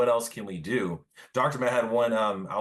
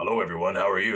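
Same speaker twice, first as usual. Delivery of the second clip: mock, really low-pitched voice. Speaker retelling greeting everyone after a breakthrough session, imitating own really low voice. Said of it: "my voice ... was like really low".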